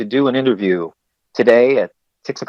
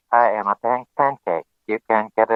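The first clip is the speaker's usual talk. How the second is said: slow, flat, monotonic robot voice. Showing how a pancake would speak, in a monotone robot voice. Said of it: "in a very monotonic voice".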